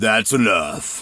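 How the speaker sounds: thunderous, enormous, deep bass voice. Recalling a big man who broke up fights, quoting him: enormous bass voice. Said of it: "with this enormous bass voice".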